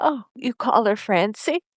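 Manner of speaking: mock near-tearful, on the verge of crying. Recapping a scene, voicing a character's reply, imitating someone almost crying. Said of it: "Paris is like almost crying".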